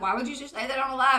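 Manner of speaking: ordinary talk, nothing marked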